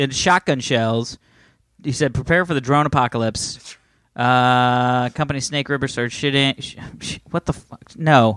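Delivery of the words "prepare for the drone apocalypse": normal talking voice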